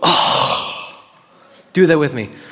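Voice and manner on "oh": breathy, exasperated, fed-up groaning "oh". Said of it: "to exasperate is when you go".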